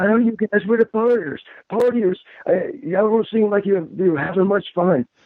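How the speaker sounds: high-pitched voice, lifted up high. Retelling what a fellow wrestler said backstage, high-pitched voice. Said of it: "and he has a high-pitched voice".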